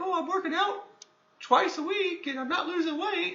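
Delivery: very high, slow, drawn-out squeaky voice. Mimicking people who complain about working out, in a Mickey Mouse-like voice. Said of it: "I don't know why I did that voice, but it sounded like uh, Mickey Mouse kind of".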